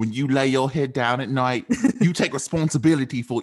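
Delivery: terrible put-on British accent. Trying out a british accent on a quoted line, in a bad british accent. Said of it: "I sound terrible".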